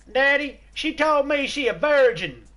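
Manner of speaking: clumsy fake American accent, very high pitch. Retelling a joke, voicing a son talking to his dad, in a bad American accent. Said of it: "I'm doing his bad American accents".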